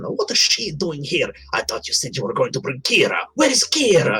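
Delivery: put-on childlike voice. Voicing an angry little statue talking about someone's presence: child's voice. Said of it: "the little statue in a child's voice".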